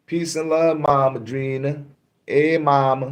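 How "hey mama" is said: attempted New Orleans accent, pitched higher. Greeting Mama Drina, trying your little New Orleans accent: put-on New Orleans accent. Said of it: "I try to do my little New Orleans accent".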